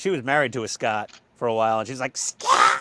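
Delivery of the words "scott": loud, full-throated yell. Retelling how a mother-in-law yelled a name: imitating Frau Farbissina yelling. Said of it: "My mother-in-law sounds like Frau Farbissina".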